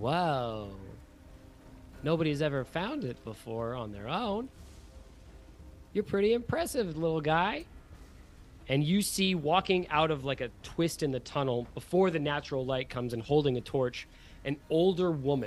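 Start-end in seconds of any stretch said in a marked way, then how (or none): 0.0-7.7 amused, echoing, swooping voice with stretched first word. Game master voicing a character who speaks from inside a den, in an amused voice. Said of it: "you hear an amused voice echo".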